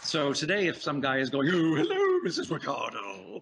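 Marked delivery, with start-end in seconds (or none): 1.5-3.4 over-the-top cartoon voice, swooping and slow. Acting out an old sitcom character greeting Missus Ricardo: extreme cartoon character voice. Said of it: "if it's a cartoon voice".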